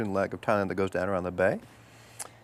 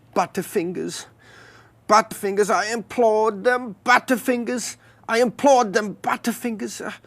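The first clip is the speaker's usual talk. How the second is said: put-on, high, slow muttering. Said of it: "he's muttering".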